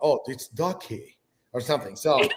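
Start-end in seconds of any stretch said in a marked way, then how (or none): 0.0-1.2 played-up, put-on British accent. Describing how British people sound when they speak: imitated British accent. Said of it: "when you hear British people speak, it's like".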